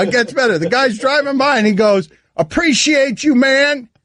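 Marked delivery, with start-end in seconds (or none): 2.4-3.8 pitched-up, hollered yell. Retelling being pulled over as a driver yells from his car: imitating someone yelling. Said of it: "He yells".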